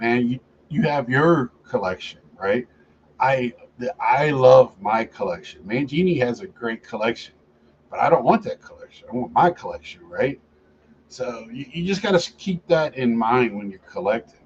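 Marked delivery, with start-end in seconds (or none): none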